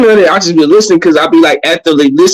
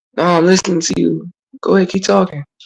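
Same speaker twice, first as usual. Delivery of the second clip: put-on mellow voice, quieter; 7 dB quieter than usual. Showing how one talks when speaking to a woman: imitating own mellow tone. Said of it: "all mellow and shit".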